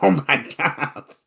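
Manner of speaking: high, tearful crying voice. Retelling a video where a car goes off a cliff: imitating Kurt Angle crying. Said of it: "and he's like".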